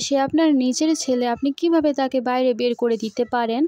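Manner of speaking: ordinary delivery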